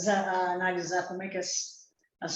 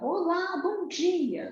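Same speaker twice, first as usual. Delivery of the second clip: cheerful, vibrant, high-pitched tone. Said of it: "foi a forma dela falar e a vibração".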